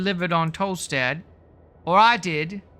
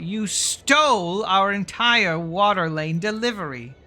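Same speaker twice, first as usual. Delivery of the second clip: slow, barked, harsh delivery. A narrator reads a character turning on Rolo, barking out. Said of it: "turns to Rolo to bark out".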